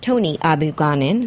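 slurred word, words run together, said too fast. Host introduces a guest by name before a speed round game, slurred. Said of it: "slurred on that".

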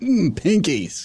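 nauseated disgust, as if about to vomit. Coaching another speaker on the word: nauseated disgust. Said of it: "vomit into your mouth kind of".

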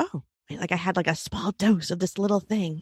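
confiding, hushed stage whisper. Retelling what a friend half-whispered to her, imitating her half-whispering. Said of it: "she was like whispering to me".

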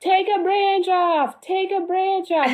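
shrill, very high, stretched, drawn-out screaming. Retelling how a tree farmer screamed at them: imitating a man screaming. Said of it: "he starts screaming at us".

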